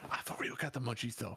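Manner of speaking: stage whisper, kept voiced. Voicing Terry, just put back on the dresser, whispering to a player: Terry whispering. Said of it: "whispers to you".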